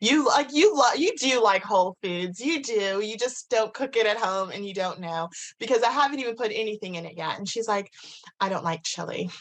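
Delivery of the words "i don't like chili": put-on California girl voice, lower pitch. Quoting a woman who says she dislikes the chili, in a california girl voice. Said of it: "I always default to like a California girl".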